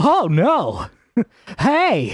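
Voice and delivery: airy, high cartoon voice with swooping pitch. Saying something reminds you of Sonic, do Sonic's airy voice. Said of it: "that really airy voice that Sonic's got".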